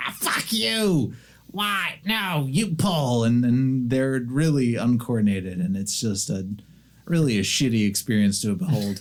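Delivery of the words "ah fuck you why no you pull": very high, very slow, drawn-out squabbling goblin snarl. Voicing goblins snarling back at the one yelling: goblins snarling back. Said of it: "snarling at each other".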